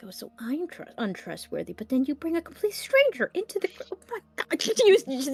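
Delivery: put-on muttering voice. A storyteller voices Nev complaining to herself, muttering under her breath. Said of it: "muttering under her breath".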